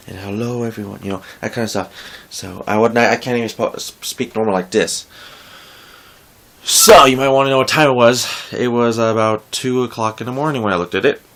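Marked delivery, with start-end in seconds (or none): 0.2-1.0 whispering, quieter. Showing how to talk when it is two in the morning: whisper. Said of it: "I have to talk, like, a whisper kind of way".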